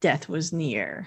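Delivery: low, slow, hushed sinister narrator voice. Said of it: "I made that sound more sinister than he did".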